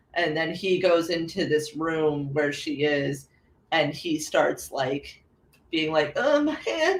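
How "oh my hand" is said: very high-pitched, crybaby-like whining voice. Retelling a film scene where Larry's hand is hurt, imitating Larry's crybaby whine. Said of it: "he's acting like an actual baby".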